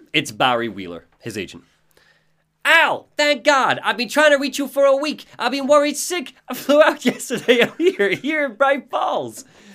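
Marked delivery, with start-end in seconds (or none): 2.6-9.4 very high, pure cartoon voice. Voicing the agent arriving and greeting his client, in a cartoonish Barry Wheeler voice. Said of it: "You're like a cartoon character from the 90s".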